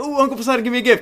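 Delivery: sweet, high-pitched, pleading, begging tone.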